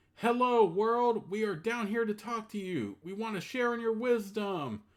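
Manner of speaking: loud, carrying shout at full voice. A narrator reads a character leaning over a chasm to call down, shouting. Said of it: "Then he shouts".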